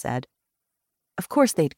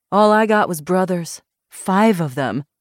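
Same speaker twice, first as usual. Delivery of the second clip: usual speaking voice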